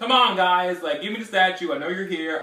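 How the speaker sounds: high, loud shouting. Retelling a character yelling through a door: imitating Asher yelling. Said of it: "yelling at them through the door".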